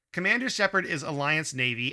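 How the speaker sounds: ordinary talk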